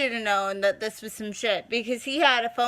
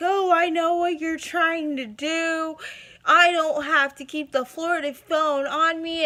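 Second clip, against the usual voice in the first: mock accusing, worked-up, angry, high screaming tirade; 5 semitones higher than usual. Retelling a phone call: imitating him screaming. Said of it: "He's screaming at me".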